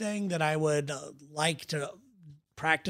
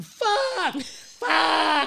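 acted-out raving scream, shrill and loud; 12 semitones higher, 6 dB louder than usual. Recalling a quiet downtown street, imitating a drugged stranger screaming.

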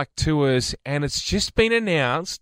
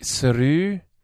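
Scottish accent with a rising lilt. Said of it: "So that sounded very Scottish".

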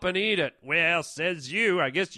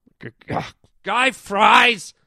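raised, drawn-out voice, stumbling over one word; 3 semitones higher, 8 dB louder than usual. Correcting how the interviewer says his name, raising his voice. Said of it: "I don't know why you're raising your voice".

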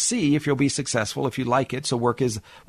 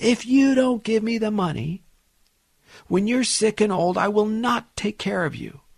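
mock angry yell at full volume, pitched up; 8 semitones higher than usual. Retelling a client's son threatening his mother: imitating a son yelling. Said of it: "yells at the top of his lung".

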